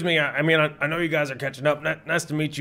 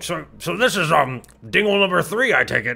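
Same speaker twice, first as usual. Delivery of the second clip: speech muffled by chewing, mouth full; 4 dB louder than usual. Player's character wanders back into the conversation, talking with mouth full. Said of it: "like mouth full of like".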